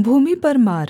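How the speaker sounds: ordinary delivery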